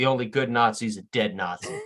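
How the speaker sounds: whispered under breath. In the story, Danny speaks under his breath to himself: whispered under breath. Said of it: "under his breath, whispers".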